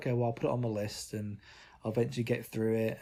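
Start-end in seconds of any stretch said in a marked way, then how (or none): none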